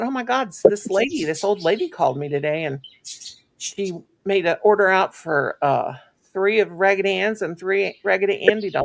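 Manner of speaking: ordinary talk, nothing marked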